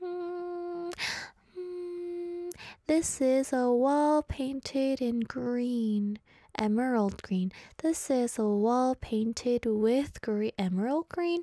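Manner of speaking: slow, pondering read, each word drawn out.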